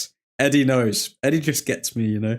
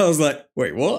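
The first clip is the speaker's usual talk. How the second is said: usual speaking voice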